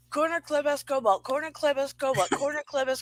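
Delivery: very fast rapid speech. Challenged by another speaker, the speaker rattles off a fast tongue twister. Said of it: "say it three times fast".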